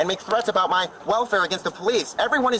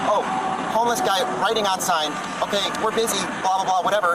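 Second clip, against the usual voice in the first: usual speaking voice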